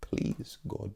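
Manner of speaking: soft, hushed, unvoiced pleading whisper.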